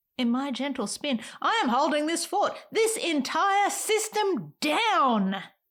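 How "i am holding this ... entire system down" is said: high shout rising to a held final word. A performer in a monologue addressed to the Moon, shouting. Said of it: "Sorry, I'm shouting".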